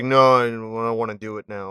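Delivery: indistinct, half-swallowed mumbling voice. Retelling what a character said when refusing: imitating someone mumbling. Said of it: "He just kinda mumbles".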